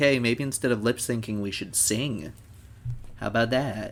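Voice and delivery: ordinary talk, nothing marked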